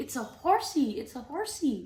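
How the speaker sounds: put-on high baby-talk voice, horn drawn out. Parent shows how they point out pictures in a book to their baby: baby voice. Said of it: "if you're talking in baby voice".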